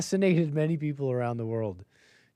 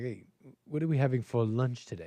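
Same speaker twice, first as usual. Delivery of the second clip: posh, stuck-up, snooty put-on accent; 4 dB quieter than usual. Imitating students asking about lunch in a snooty accent. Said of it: "why I'm giving them that snooty accent".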